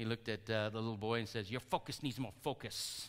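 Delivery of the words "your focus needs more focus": bad Chinese accent, spoken more quietly. Speaker quoting Jackie Chan's line to the boy in Karate Kid, a terrible Jackie Chan impersonation. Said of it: "Is that a terrible Chinese impersonation?".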